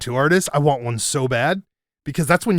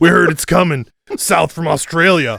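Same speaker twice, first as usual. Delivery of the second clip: mock stoner surfer voice, louder; 4 dB louder than usual. Joining in acting out surfers from a movie: imitating surfer stoner talk. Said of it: "surfer stoner talk".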